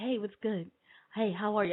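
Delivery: play-acted laid-back, calm, easygoing casual voice. Retelling how the caller just answered the phone: imitating a calm, casual greeting. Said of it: "He all calm. He like".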